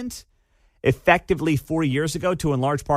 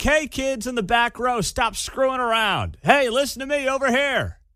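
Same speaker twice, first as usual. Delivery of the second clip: higher-pitched, weak, toothless substitute teacher scolding voice; 9 semitones higher than usual. Mocking a leader's speech as a substitute teacher scolding the back row: substitute teacher voice. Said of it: "the substitute teacher who's filling in for the day, who's like".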